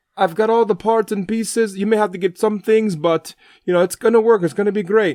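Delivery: put-on Jamaican accent. Retelling what a man said about a project he would work on, put-on Jamaican accent. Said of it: "I've got to do my best Jamaican accent".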